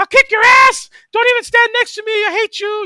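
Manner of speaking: put-on, very high, furious, angry yelling outburst. Retelling how a high-voiced guy the group laughed at would get angry: imitating an angry high-pitched yell. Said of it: "then he'd get angry".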